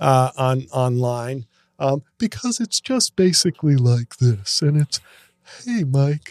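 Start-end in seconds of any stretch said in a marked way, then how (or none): 5.6-6.3 goofy, funny character voice. Showing the Gary impression that got praise online: Gary impression. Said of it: "my, uh, Gary impression".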